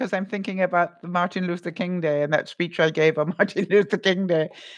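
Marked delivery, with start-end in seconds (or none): 2.5-4.5 words spoken through laughter. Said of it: "I'm laughing 'cause".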